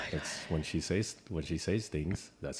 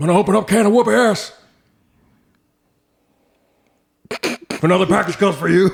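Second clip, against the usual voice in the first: very loud, high-pitched badass tough-guy yell; 13 semitones higher, 16 dB louder than usual. Imitating the other speaker as they sound in their head: Stone Cold voice. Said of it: "if I sound like Stone Cold".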